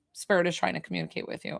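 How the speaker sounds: matter-of-fact, offhand, nonchalant whisper. Retelling an inner voice repeating its answer: imitating a very direct, nonchalant voice. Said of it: "very direct, very, like, nonchalant".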